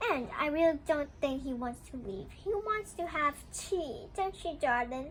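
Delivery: plain reading voice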